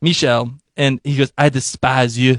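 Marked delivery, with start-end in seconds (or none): 1.4-2.4 poorly faked French accent. On a podcast, quoting Michel's line from the show, in a bad Michel French accent. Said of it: "I'm totally gonna do the the worst French accent".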